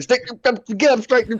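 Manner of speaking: acted, bossy, very high, barking shouts. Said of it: "He starts whipping people's butts".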